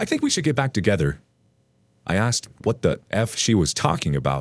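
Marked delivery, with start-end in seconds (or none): 0.0-1.2 high, cheery, seemingly ironic tone. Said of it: "in a cheery, seemingly ironic tone".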